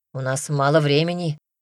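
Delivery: ordinary delivery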